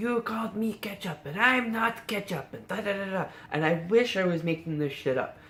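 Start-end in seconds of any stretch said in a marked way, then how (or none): 0.0-3.3 furious, angry, pitched-up yelling. Retelling how an angry dude at the hotel yelled at them: imitating Heinz yelling. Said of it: "he starts yelling at us".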